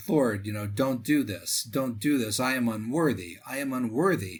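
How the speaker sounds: put-on sobbing voice. Retelling a plea to the Lord not to do this: imitating someone sobbing. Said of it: "Pio's sobbing".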